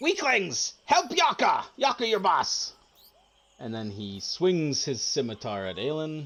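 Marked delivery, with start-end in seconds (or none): 0.0-2.7 very high screech, swooping and swinging wildly. Game master voicing Yaka mid-fight, screeching Yaka voice. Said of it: "He kind of screeches and he screeches out".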